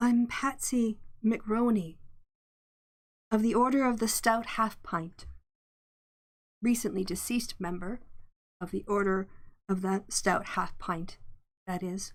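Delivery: eerie ghostly voice. A game master voices a recently deceased member introducing herself; ghostly voice. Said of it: "with a sort of ghostly voice".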